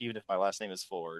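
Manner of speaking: very quiet, barely audible hushed half-whisper. Retelling a commercial's ending, half-whispering out a car window: imitating Harrison Ford half-whispering. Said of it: "whispering really quietly out the window".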